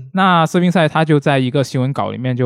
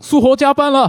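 shrill, very high, loud yelled shout; 12 semitones higher, 4 dB louder than usual. Speaker recalls spotting big news in a group chat, retelling a loud shout. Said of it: "然后我就大喊一声".

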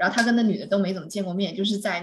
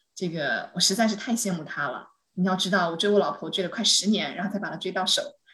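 normal talking voice

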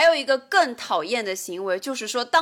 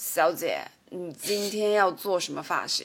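put-on smarmy, greasy, oily sweet-talking charm; 4 semitones lower than usual. Retelling a hair salon scene, imitating a stylist: greasy, smarmy tone. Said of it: "用非常油腻的语气来跟你说".

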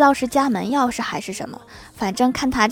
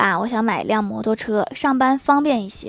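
ordinary talk

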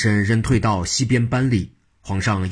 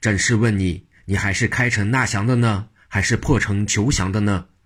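ordinary delivery

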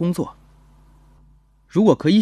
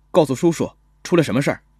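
ordinary delivery

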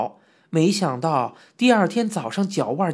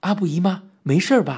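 plain reading voice

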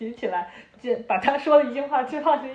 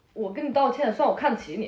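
normal talking voice

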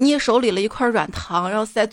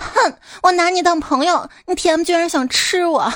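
put-on cross, indignant, high-pitched angry girl's voice; 7 semitones higher than usual. Telling a joke about a boy's confession, the speaker plays the girl: imitating an angry girl. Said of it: "女孩生气的说".

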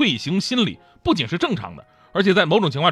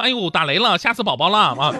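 ordinary delivery

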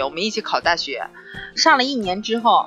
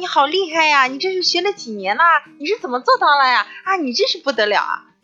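mock southern Chinese accent, much higher, louder, faster; 9 semitones higher, 5 dB louder than usual. Contrasting how southerners and northerners give compliments: imitating a southern chinese speaker. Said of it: "南方人夸你说啊".

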